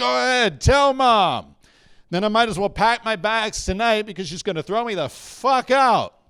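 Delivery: put-on drunk, high-pitched yelling. Retelling what the drunk father yelled while peeing: imitating dad yelling. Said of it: "he's yelling at me going".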